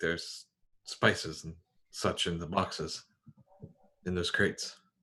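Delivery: whispering. In a role-play scene in a shadowy hold, a character whispers to q. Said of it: "I will whisper to Q".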